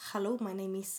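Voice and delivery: Spanish accent in English. Showing how a Spanish accent sounds in English, in a Spanish accent. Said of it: "hur pratar man spansk accent på engelska?".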